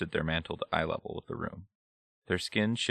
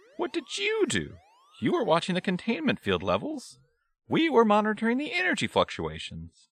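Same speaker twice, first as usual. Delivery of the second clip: very high, little, swooping squeaky voice; 4 dB louder than usual. Reading a story, the splits answer an accusing question in a squeaky voice. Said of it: "The splits squeaked out".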